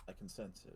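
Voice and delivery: barely audible, hushed, very quiet whisper. Speaking in character to the party gathered close: speaking very quietly. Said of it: "I say this very quietly".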